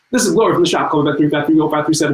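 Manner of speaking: very fast, rushed, rattled-off delivery. Acting out the second voicemail Gloria from the shop left, imitating Gloria's rapid message. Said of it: "She would talk as fast as she could".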